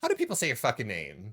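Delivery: aggressive, in-your-face, flamboyant camp tone. Acting out a question planned for someone they'll meet at BlizzCon: mock aggressive question.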